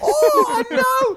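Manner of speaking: very high, loud, squealing mock British whine. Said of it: "We used to be so British".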